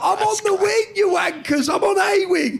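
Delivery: play-acted, very high, defiant shouting. Retelling shouting back at other prisoners from a prison wing: retelling shouting from a cell. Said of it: "And I'm shouting what cell number".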